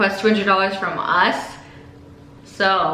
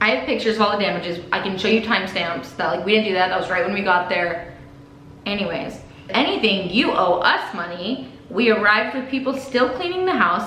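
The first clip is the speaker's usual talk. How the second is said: ordinary talk, nothing marked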